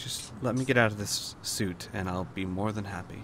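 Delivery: gentle, quiet, soft-spoken, understated delivery. Al answers the request to come along with him, speaking quietly. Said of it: "he says kind of quietly".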